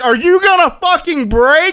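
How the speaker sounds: very high, shrill, loud scream, acted out. Telling a story about almost crashing, the speaker re-enacts their own scream. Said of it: "I I screamed".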